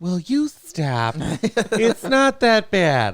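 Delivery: loud, put-on Wisconsin accent. Speaker quotes their mom telling them to stop: put-on Wisconsin accent. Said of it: "the Wisconsin accent".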